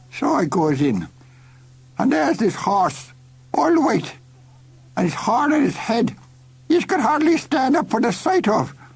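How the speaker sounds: put-on drunken, sloshed, rambling voice, very high pitch. Reading a story aloud, a drunk man tells his tale, drunk man's rambling voice. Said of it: "and he's properly sloshed." / said [name]. / "Am I drunk?" "I beg your pardon," said [name]. "I said, am I drunk?" Perhaps. A little."".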